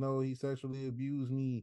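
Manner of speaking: plain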